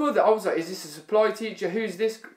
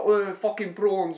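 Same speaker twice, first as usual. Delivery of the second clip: put-on South African accent, slower. Describing someone's accent, the speaker does a District Nine South African accent. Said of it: "a South African accent, like per se. Like you'd hear on uh, what was it, District Nine?".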